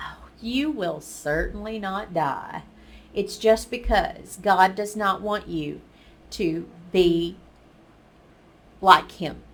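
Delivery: ordinary talk, nothing marked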